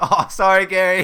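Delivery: very loud, high-pitched speech through laughter. Imitating how Preston would apologize after cutting him off: imitating Preston laughing while apologizing. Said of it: "He's, like, laughing".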